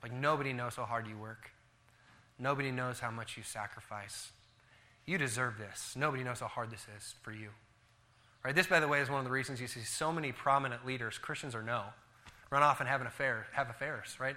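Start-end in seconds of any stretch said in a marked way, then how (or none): 0.1-7.5 soft, low, coaxing and tempting half-whisper. Describing temptation, voicing the devil's words: imitating the devil half-whispering. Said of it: "he starts whispering".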